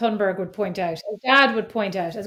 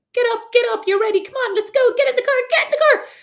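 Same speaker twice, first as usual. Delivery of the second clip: very high, shrill, loud, stressed screaming; 14 semitones higher, 5 dB louder than usual. Retelling mornings hurrying her son out the door: imitating her own screaming. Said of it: "by just screaming".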